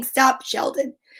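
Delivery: plain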